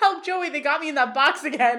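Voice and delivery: loud yell. Describing a comedy scene, quoting a character surrounded by mimes, retelling a yell for help. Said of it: "he yells".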